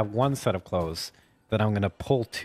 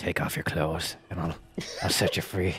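hushed whisper right into an ear; 3 semitones lower, 4 dB quieter than usual. Hugging a man in a game scene and whispering in his ear: whispering in character. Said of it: "I'm gonna whisper in his ear".

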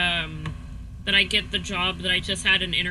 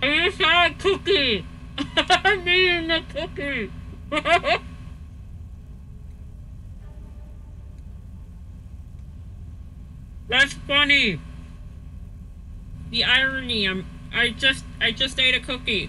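talking with mouth full, much higher; 7 semitones higher than usual. Playing Skyrim while eating a cookie, talking with mouth full. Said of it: "That's why my mouth is all full".

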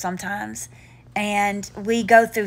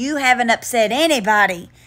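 normal talking voice

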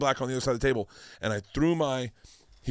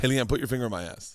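ordinary talk

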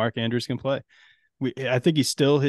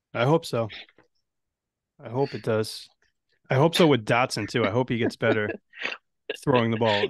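defeated, dejected, resigned delivery. [name], talking with his co-hosts about his Washington shares, sounding defeated. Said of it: "you sound so defeated when you say that".

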